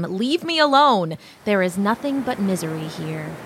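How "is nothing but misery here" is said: ordinary talk, nothing marked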